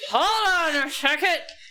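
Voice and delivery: muffled call, drawn out. Voicing someone behind a door, heard muffled through it. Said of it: "you hear a muffled".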